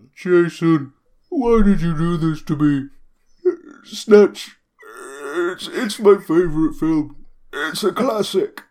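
very loud, high, awful put-on bear voice. Voicing a bear in a tabletop game, in an awful bear accent. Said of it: "If you can say that in a bear accent".

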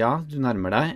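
ordinary delivery

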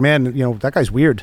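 ordinary talk, nothing marked

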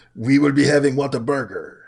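mock, put-on French accent. Joking about the Paris Agreement meaning lunch plans: mock French accent. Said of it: "Is that your French impression?".

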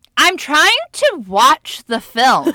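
very loud, very high, slow and drawn-out. Retelling a dad's complaint while others joke during a film: imitating dad saying it loudly. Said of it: "and just loudly goes".

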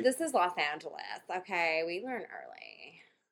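put-on Valley girl accent. Playing a Valley girl in a car during a reenactment: Valley girl voice. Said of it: "there's a Valley girl in her backseat".

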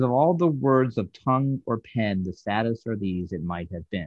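ordinary delivery

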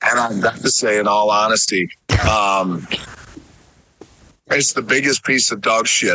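very low, deep, dropped-down voice. Playing a supposed audio clip of a movie review: deeper Roger Ebert voice. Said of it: "your voice got deeper".

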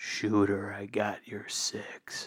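hushed, close whisper. A player's character leans over to Murph's ear, whispering. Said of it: "I'm going to whisper right into his ear".

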